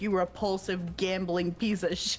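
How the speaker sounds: ordinary delivery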